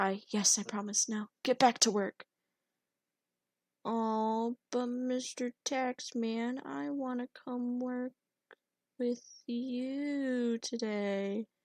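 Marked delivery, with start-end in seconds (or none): 0.0-2.2 hushed, low-voiced, quiet under the breath. The tax collector pauses, then answers the promise in a hushed voice. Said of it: "spoke with a hushed voice".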